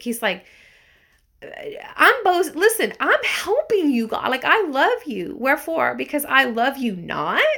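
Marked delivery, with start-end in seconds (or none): 2.0-7.4 sarcastic, mocking, pitched-up sing-song delivery. Paraphrasing a scripture writer's words aloud: imitating a sarcastic tone. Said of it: "He's being sarcastic".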